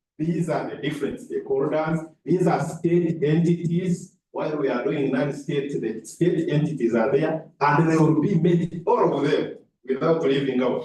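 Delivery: plain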